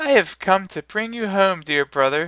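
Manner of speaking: very high, gleeful laughing voice. A little sister speaks to her dear brother; laughing. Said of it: "clapping her tiny hands and bending down to laugh".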